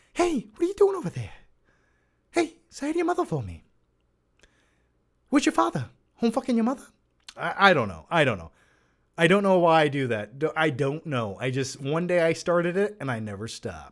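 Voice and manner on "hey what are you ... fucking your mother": high swooping voice, "hey" hit high with swinging pitch. Answering a viewer's question by showing a Mark Wahlberg impression. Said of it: "to get a Mark Wahlberg impression out".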